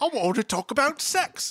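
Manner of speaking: bad put-on Australian accent. Imitating a teen character who shows up in an episode: bad Australian accent. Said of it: "I can't do an Australian accent".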